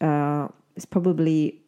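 normal talking voice

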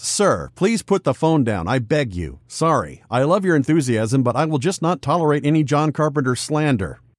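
ordinary talk, nothing marked

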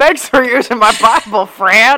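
put-on loud Texas accent. Repeating the voice you just said you love, Texas-accent Abe Lincoln voice. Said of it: "Why is he from Texas?".

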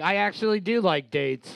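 plain

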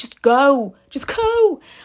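high-pitched, exasperated, insistent voice.

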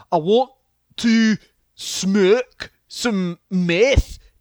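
botched accent landing Scottish, very slow. Trying an accent after another speaker's challenge, the attempt comes out Scottish. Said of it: "it came out Scottish".

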